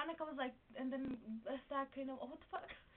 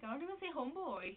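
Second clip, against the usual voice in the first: ordinary talk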